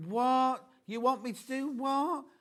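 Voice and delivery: put-on bored woman voice. Voicing the lady drawn on the pattern packet: imitating a bored woman. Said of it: "She looks so bored".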